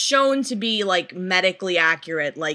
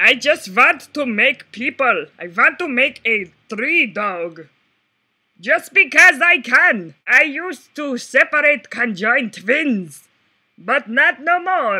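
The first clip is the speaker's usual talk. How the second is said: fake German accent, higher and louder; 3 semitones higher, 5 dB louder than usual. Imitating the creepy german doctor from a horror movie: put-on german accent. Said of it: "I don't know how to do a German accent".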